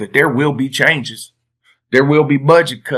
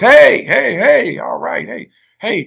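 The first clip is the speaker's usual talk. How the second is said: high, drawn-out calling voice; 10 semitones higher than usual. Retelling a school home visit, the speaker imitates someone calling from the porch. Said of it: "the lady call the principal name from the porch".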